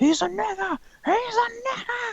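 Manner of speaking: very high, screamed ranting.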